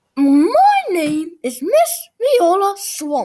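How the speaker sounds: scratchy, scraping, loud, high voice. Narrator reads Miss Viola Swamp introducing herself to the kids, scratchy voice. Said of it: "said the lady in a scratchy voice".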